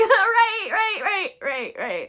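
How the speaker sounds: very loud, high, swooping, acted nervous laughter. Retelling the reaction when he laughed in the speaker's face; retelling nervous laughter. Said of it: "I'm like laughing nervously".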